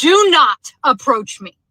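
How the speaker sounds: slow, deliberate yelling, each word spaced apart. Retelling a parking lot encounter with a man: retelling own yell. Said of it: "I literally yelled at him and I said".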